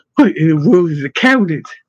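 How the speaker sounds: plain reading voice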